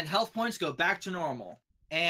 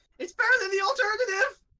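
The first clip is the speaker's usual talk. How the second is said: very high, shrill, loud squealing cry; 5 dB louder than usual. Game master voices a figure the players hear during combat, in a high-pitched squeal. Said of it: "a very high pitched squeal going".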